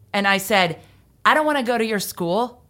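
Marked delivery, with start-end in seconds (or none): 1.3-2.5 put-on snotty, sassy teenage attitude, pitched up. Retelling own reply as a seventeen-year-old: retelling own reply with teen attitude. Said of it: "with attitude, like only a seventeen-year-old can".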